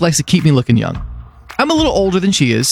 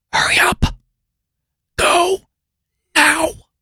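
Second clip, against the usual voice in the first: high, drawn-out, slow, hushed coaxing whisper; 12 semitones higher than usual. Retelling urging a dog to go outside at night: imitating own whisper. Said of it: "I'm whispering to my dog".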